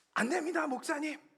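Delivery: high-pitched pleading.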